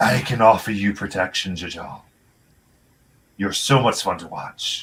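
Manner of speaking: echoing voice. A cloaked figure standing next to you on the crow's nest speaks; echoey voice. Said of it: "voice that speaks, it's like echoey".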